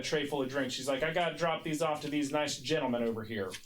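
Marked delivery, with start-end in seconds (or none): none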